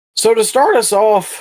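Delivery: loud voice crack, pitching up. Starting a wrestling match breakdown on a show, voice cracking. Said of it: "a little voice crack there".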